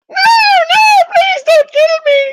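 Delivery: very high, drawn-out, pleading goblin voice. Voicing a bound goblin that a player may kill: goblin begging for life. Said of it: "They're talking in goblin".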